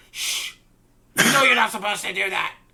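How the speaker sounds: very high, shrill, very loud scolding goblin chorus. The other goblins turn on a goblin who spoke out, scolding goblin voices. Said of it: "The other goblins at this point turn and look at him and go".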